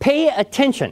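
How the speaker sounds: annoyed, irritated tone, very high-pitched. A speaker in a talk on attentiveness voices what teachers tell students, irritated tone. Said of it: "in an irritated tone of voice saying".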